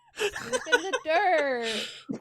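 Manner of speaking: sarcastic fake excitement breaking into a laugh.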